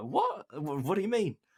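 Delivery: very high-pitched, stunned disbelief.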